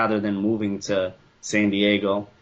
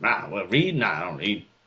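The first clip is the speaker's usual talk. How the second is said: put-on quick classic Boston accent; 2 semitones higher than usual. Doing the dad's voice, whom the speaker calls a classic boston dude. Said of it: "classic Boston dude. Uh, that voice".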